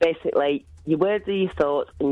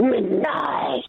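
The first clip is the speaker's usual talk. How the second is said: higher, terrifying, scary voice; 9 semitones higher than usual. Saying a word on request in the voice just used: terrifying voice. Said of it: "in that voice you just did it then".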